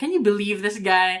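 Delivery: put-on sarcastic tone. Retelling a look at the judge during a debate: retelling a sarcastic remark. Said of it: "in a sarcastic way".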